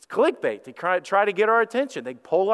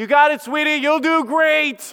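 high, loud, slow, sweet encouraging parental tone. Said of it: "she wasn't requesting to say".

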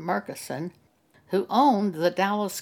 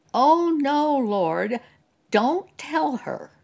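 put-on very slow, very loud, drawn-out shout; 7 semitones higher, 4 dB louder than usual. Retelling a woman in the congregation shouting to the Lord, very loud shout. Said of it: "in a very loud voice shouted".

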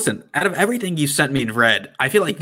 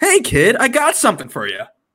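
put-on kindly grandpa voice, high and swooping; 9 semitones higher, 4 dB louder than usual. Reading a grandpa character's lines from a shared document; nice, less creepy grandpa voice. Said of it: "Let's hear your nice, less creepy grandpa".

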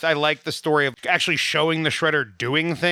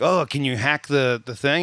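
ordinary talk, nothing marked

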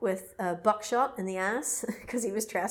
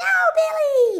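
put-on very high, very loud, shrill little-girl scream; 9 dB louder than usual. Retelling a strange voice on a call, imitating a little girl screaming. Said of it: "the little girl is screaming like".

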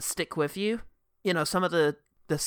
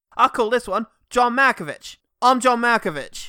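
put-on Cockney film-star voice, higher and louder; 7 semitones higher, 8 dB louder than usual. Joining an imagined impression reel by Michael Caine: Michael Caine voice. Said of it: "What if Michael Caine did an impression reel".

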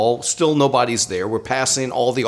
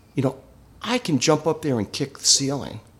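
mock calm voice, quieter and faster; 4 dB quieter than usual. Retelling what a man said while staring at the ceiling: imitating a calm voice. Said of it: "And in the most calm voice".

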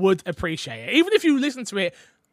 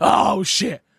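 put-on grumpy older man voice. Teasing another speaker as a dad home from work: imitating a grumpy old dad. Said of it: "your grumpy old dad that comes home from work".

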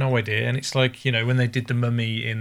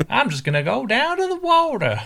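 put-on full-on American accent, very high and swooping; 13 semitones higher, 4 dB louder than usual. Describing mismatched accents, quoting a farmer's little daughter in a full-on American accent. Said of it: "his little daughter who speaks full-on".

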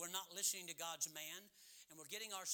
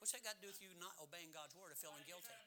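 ordinary delivery

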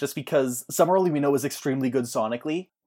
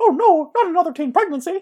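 very high, loud, squeaky cartoon voice; 6 dB louder than usual. Saying a Kurt quote as a bit: Mickey Mouse voice. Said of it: "to say in the Mickey Mouse voice".

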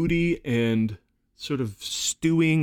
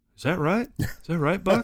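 put-on wide-eyed, innocent, pitched-up Texas accent; 6 semitones higher than usual. Discussing a movie character who acts like he's from Texas, imitating a Texas accent. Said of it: "he immediately acts like he's from Texas".

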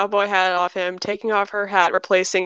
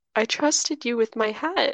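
exaggeratedly sorrowful, overly sad, wounded pleading tone; 2 semitones higher, 4 dB quieter than usual. Voicing a character hurt over a card game: overly sad. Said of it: "she sounds really overly sad about a card game".

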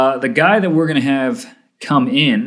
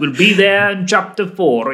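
put-on British preacher accent, higher pitch; 6 semitones higher than usual. Imitating a preacher announcing a Bible passage: Martyn Lloyd-Jones impression. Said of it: "his voice is like".

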